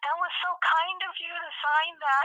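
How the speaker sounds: put-on old woman voice, very high. Retelling what his mom said to a man who signed something, old lady voice. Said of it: "like an old lady".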